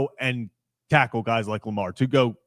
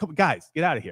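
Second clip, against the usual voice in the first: mock annoyance, higher; 4 semitones higher than usual. Acting out a player brushing off defenders: imitating annoyed tone. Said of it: "he's literally, like, annoyed with them".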